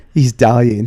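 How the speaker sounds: put-on panicked voice. Retelling a night at a police station: imitating own panic. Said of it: "And I panic, going".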